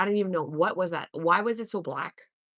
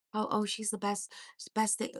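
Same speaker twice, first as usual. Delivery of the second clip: fake-sounding, phony gushing praise; 3 semitones higher, 6 dB quieter than usual. Retelling how a man talked about her: mocking fake-sounding praise. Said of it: "it was so fake".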